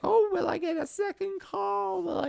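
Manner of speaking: high, panicked, hopeful freak-out. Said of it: "just freaking out".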